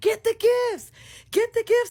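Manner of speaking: shrill, high, loud yelling. Recalling grabbing everything off the gift table, retelling a yell. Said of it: "I'm yelling".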